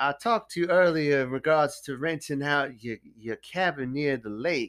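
put-on slow-talking, polite Texas southern accent. Retelling a story, acting out what Wayne said, Wayne's southern accent. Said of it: "keep going with it".

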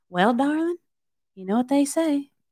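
put-on soft, light country accent, eased into softly. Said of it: "she has like a lighter country".

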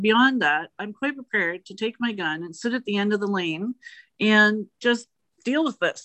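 ordinary delivery

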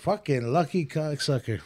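ordinary delivery

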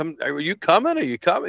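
loud, swooping, egging-on yell. Retelling how the others yelled at him to come: imitating someone yelling. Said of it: "they're yelling at me".

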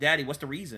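plain

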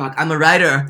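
very loud, high shout. Declaring to another speaker that they are a writer: yelling. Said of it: "why are you yelling at the girls?".

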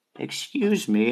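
put-on polite, elderly old grandfather voice. Describing someone's grandfather coming up beside you, imitating an old man. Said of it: "somebody's grandfather coming up next to you".

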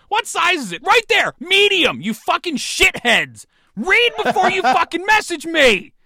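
furious shouting. Reacting to a message asking a listed jersey's size, angry yelling. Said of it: "now it's the angry and negative show".

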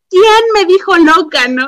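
furious demanding tone. Retelling a school story, the speaker quotes the teacher storming into class; acting out a furious teacher. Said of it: "llegó super roja del coraje".

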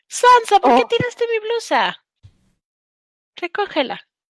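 sugary sweet, very high voice. Speaker breaking off a conversation to scold her cat, sweet voice. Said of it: "You sounded so sweet".

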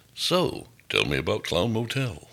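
swooping radio announcer voice. On a show, the host mocks interviewers who talk in a radio voice. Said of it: "the guy with the radio voice going".

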